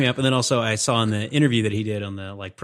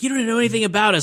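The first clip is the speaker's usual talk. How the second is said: mock shrill yelling, very high pitched; 12 semitones higher than usual. Retelling a movie scene where she yells at him: imitating someone yelling. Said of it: "And she starts yelling at him".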